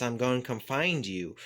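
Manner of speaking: normal talking voice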